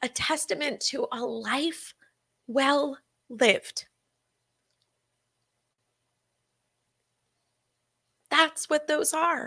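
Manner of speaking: choked-up voice catching with feeling. Sharing a saying someone once told them, getting choked up. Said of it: "I'm getting all choked up".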